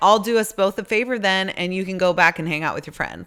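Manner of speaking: plain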